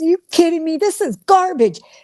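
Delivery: play-acted high yelling. Retelling a husband yelling at a movie: imitating husband yelling. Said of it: "he was yelling at, at the movie, and he goes".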